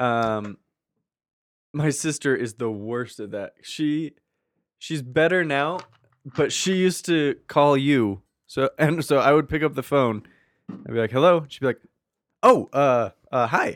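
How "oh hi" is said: put-on, drawn-out, startled, slow stammering. Retelling how the speaker's sister answered on the phone, imitating a surprised voice. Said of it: "she always sounded so surprised".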